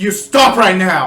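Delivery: very loud, slow booming voice. Shouting at a fleeing figure with magically amplified voice: louder commanding voice. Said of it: "use the thumb authority to make my voice sound a little louder".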